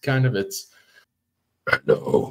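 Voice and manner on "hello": very low, scratchy monster voice. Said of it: "whenever you're trying to make a monster voice".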